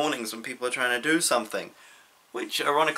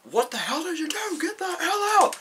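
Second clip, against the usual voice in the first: put-on creature scream, higher. Retelling how the Beast finds Belle looking at the rose: imitating the Beast screaming. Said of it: "he's just, like, screaming".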